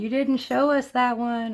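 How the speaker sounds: high, loud mock yell, complaining tone.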